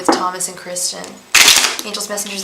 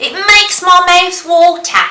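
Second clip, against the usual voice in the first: awful put-on Australian accent, very high and loud; 10 semitones higher, 10 dB louder than usual. Asked on a boat whether they can do one, the speaker tries a horrible australian accent. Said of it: "I do a horrible Australian accent".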